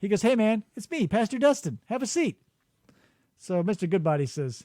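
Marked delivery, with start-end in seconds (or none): 0.2-2.4 easygoing, laid-back, cool-sounding relaxed voice. Acting out a cool pastor greeting a visitor: cool guy pastor voice. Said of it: "'Cause he's a cool guy".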